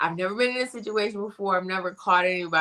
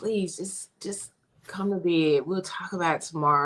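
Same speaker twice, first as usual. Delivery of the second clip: put-on calm, chill tone; 3 dB quieter than usual. Speaker retells a man asking the speaker to come back to bed, imitating him being chill. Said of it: "he was genuinely on chill the whole time".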